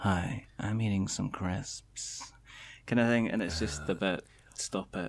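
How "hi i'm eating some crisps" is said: very slow, drawn-out, close-mic ASMR voice. Joking about doing ASMR close to the mic, demonstrating an ASMR voice. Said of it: "you can do this kind of A S M. Was it A S M R thing? You can go".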